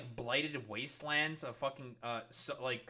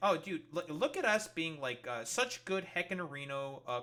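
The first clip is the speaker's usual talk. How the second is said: normal talking voice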